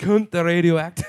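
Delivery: mock Cockney accent.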